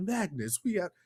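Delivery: very quiet, soft, hushed voice. Mocking how Charles says a name on the show: imitating Charles' voice. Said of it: "Charles' voice on the show is like".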